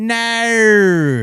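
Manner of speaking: very high, clumsy Australian accent, stretched, drawn-out No. Showing how Australians say a word: attempted Australian accent. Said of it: "When they say".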